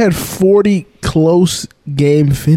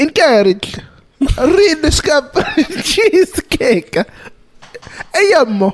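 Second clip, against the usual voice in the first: Italian accent, much higher, slower; 11 semitones higher than usual. Reading a viewer's Discord message aloud on the show, in an Italian accent. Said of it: "read this in his Italian accent".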